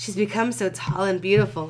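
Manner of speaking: ordinary delivery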